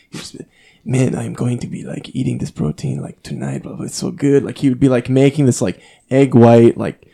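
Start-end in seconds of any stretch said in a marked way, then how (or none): 0.8-4.4 put-on English spoken with a Brazilian accent. Quoting a friend he lived with, in that friend's Brazilian accent. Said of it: "he had this insane Brazilian accent".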